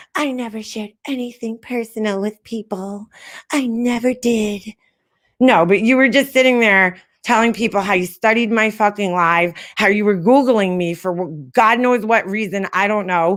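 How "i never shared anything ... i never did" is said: sugary, sweet, innocent little voice. Mocking a woman's claim on her panel: imitating a sweet little voice. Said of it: "sweet little voice".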